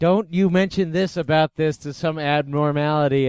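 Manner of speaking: ordinary delivery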